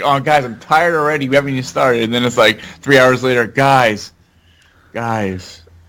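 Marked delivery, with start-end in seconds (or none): none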